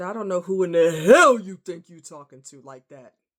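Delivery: booming, very loud screaming. Retelling what the speaker said back to a man, in a really deep voice. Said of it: "there was a really deep voice that came out of me".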